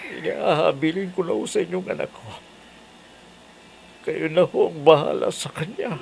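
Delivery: speaking through tears. Saying goodbye to their mother before leaving, crying while talking. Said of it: "umiiyak ka ba ha?".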